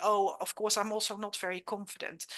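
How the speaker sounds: usual speaking voice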